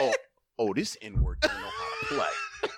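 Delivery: high, laughing jeering. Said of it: "I reverted to".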